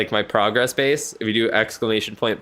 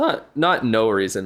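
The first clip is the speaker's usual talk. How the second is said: slow voice that cracks partway through. Correcting an overstatement about game levels, voice cracking. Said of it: "that was a voice crack and a half".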